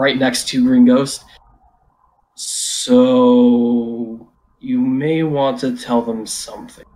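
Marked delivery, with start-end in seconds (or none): 2.3-6.7 very slow, deliberate, unhurried, drawn-out delivery. Speaking in character to a duplicate after a discovery: speaking slowly. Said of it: "slowly says to his duplicate".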